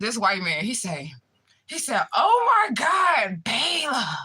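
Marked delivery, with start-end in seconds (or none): 2.1-4.0 play-acted, very high, very slow, infatuated gushing. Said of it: "He was like infatuated".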